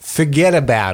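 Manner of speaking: New Yorker accent. Starting someone off on a New York accent, New York accent. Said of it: "Yorker accent. ... I'll start you off".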